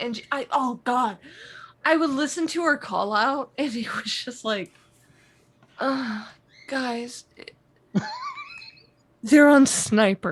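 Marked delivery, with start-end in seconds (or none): 5.8-10.3 mock breathy, sultry, sexy voice, pitched higher. Retelling a teammate's slow callout in a match: imitating a breathy sultry callout. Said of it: "because it was so sexual".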